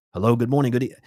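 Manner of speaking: breakneck, fast, rattled-off patter. Imitating the channeler Bashar after a chat question: imitating Bashar talking really fast. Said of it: "I can't talk that fast".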